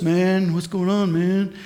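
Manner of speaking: hippie California surfer-dude voice. Telling a story, imitating how the hippie california surfer guy talks. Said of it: "he talks like this".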